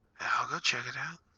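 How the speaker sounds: hushed, voiceless, soft half-whisper. Game master voicing Blanco offering to scout ahead for the party, Blanco half-whispering. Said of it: "he whispers".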